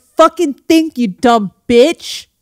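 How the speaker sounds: mock harsh, belittling, slow and aggressive. Retelling how the other speaker seems to talk to them: imitating someone attacking. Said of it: "attacking me for being a dum-dum".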